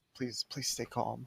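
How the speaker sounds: hushed whisper. A player's character, trying to lay low, whispering to the mounts. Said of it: "just whisper to the mounts".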